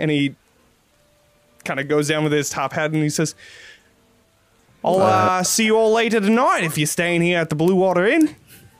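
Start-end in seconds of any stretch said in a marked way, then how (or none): 4.8-8.3 put-on Aussie-accented character voice, pitched up. Running a game, speaker voices a stranger bidding the group farewell, Australian accent.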